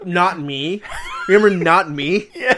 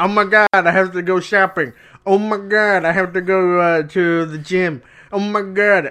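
slow comic-strip character voice, each line drawn out. Mimicking a comic strip character's repeated complaints: imitating Kathy. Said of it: "and then and she would say".

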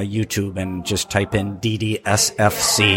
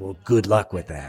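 put-on condescending voice. Retelling what a rival filmmaker said: imitating a condescending tone. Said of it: "really condescending".

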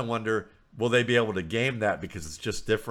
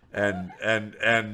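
ordinary delivery

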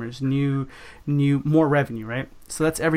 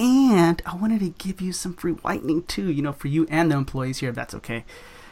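conspiratorial, sneaky, just-for-you tone; 3 semitones higher than usual. Showing the better way to offer free whitening: sneaky special-deal tone. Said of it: "make it kinda like".

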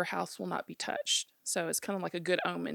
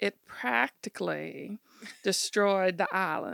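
put-on slow, unhurried old-lady Carolina Southern accent; 4 dB louder than usual. Imitating an old lady's Carolina speech, in a slow old-lady Southern accent. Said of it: "they've got that Carolina Southern accent. I'm going to see if I can do it".

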